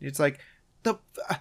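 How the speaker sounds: normal talking voice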